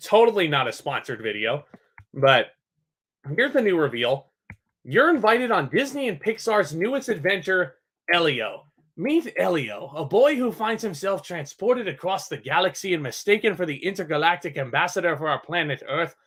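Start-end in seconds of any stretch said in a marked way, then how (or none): 9.0-16.1 accidentally drifting into an Irish accent. Streamer reading out a Coca-Cola promo for a new movie, Irish accent. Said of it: "I don't know why I went into an Irish accent right there".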